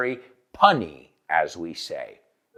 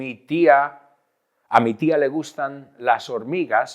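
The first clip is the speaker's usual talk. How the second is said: ordinary talk, nothing marked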